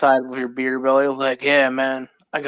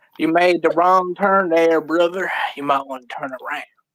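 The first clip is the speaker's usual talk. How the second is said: put-on gummy, toothless, teeth-out old-person voice; 3 semitones higher than usual. Playing a local who meets a lost stranger; toothless old person voice. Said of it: "take out your teeth and talk like an old lady or an old man".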